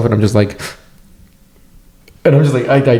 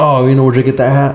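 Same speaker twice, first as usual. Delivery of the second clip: usual speaking voice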